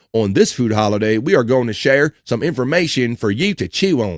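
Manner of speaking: reading in a country accent. Reading aloud about National Jerky Day, slipping into a country accent. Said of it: "I don't know why I got a country accent on there".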